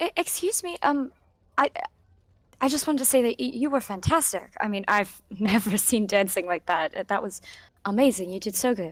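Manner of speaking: quiet, hesitant, timid, slightly nervous voice. Speaking to a dancer after her performance: quiet and a little nervous. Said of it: "kind of like quietly, a little bit nervously".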